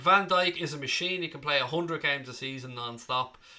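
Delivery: ordinary talk, nothing marked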